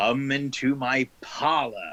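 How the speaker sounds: words stretched out very slowly and drawn-out. Voicing Adrian calling from down a corridor: booming voice. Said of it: "Adrian's voice booming from down the corridor".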